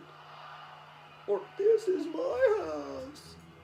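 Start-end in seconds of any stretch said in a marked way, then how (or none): 1.6-3.3 very high-pitched, very slow mock voice. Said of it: "Did you hear her?".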